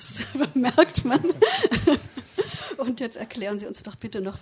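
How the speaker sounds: laughing through words.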